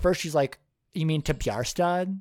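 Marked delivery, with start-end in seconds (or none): 0.9-2.2 put-on, mock-condescending tone. A speaker recaps a scene where a woman turns down a date, mock-condescending. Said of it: "she says it in like such a clearly like condescending way".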